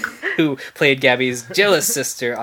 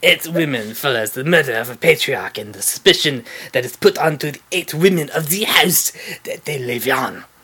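put-on French accent, read out. Describing the film eight women, read in a put-on french accent. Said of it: "my extremely accurate French accent".

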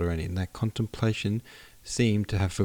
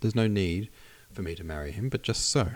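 ordinary delivery, nothing marked

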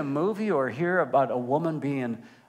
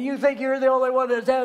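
play-acted, very high-pitched, furious blow-up; 9 semitones higher, 3 dB louder than usual. Retelling an appliance guy's reply to a phone question: retelling an angry blow-up. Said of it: "And he just blew up".

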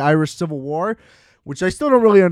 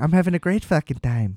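put-on Irish accent; 5 dB quieter than usual. Describing how troubled everyone is except Colin Farrell, quoting him in put-on Irish accent. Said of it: "It keeps slipping out of the accent".

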